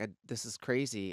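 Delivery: plain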